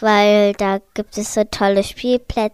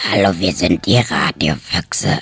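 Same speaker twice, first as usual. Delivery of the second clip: strange, very low put-on dinosaur voice. Greeting radio listeners while trying to speak in a strange dinosaur voice. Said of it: "Ich versuche so wie ein Dinosaurier zu sprechen".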